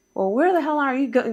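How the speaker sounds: high, exasperated, scolding yell. Retelling how someone on the phone was yelling at the speaker's mom: imitating someone yelling. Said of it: "yelling at my mom".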